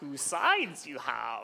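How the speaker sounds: put-on voice, slow, swooping, sing-song drawl. Joking about a picture of a two-sided phone, in a bad Yoda impression. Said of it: "That's my Yoda impression".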